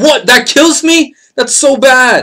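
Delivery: shrill, very high, loud, drawn-out exasperated scream. Reacting to a sudden death in the game: screaming in frustration. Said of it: "Sorry for screaming".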